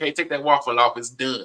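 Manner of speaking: ordinary talk, nothing marked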